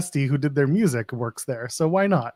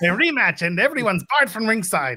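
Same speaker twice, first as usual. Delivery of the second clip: put-on very strange, high Eastern European accent; 6 semitones higher than usual. Pitching a wrestling storyline, quoting Santino Marella in weird Eastern European accent. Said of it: "sound like Eastern European in like the weirdest way".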